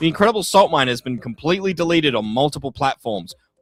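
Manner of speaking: normal talking voice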